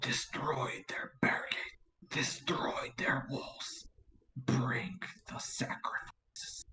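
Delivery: creepy whispered voice. Reenacting a line he heard in the game over Discord, in a creepy voice. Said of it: "And he says in his creepy voice".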